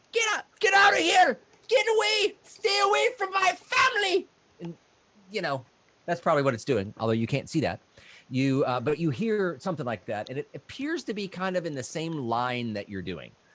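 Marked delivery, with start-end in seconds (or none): 0.1-4.2 very high, loud, shrill halfling yell. Voicing a halfling heard in the distance: halfling yelling.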